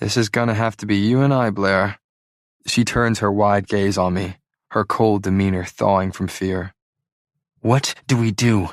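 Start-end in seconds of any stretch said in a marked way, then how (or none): 7.6-8.7 harsh, rough whisper, slower. Facing an approaching snake beside the narrator, she speaks in a harsh whisper. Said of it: "She whispers harshly".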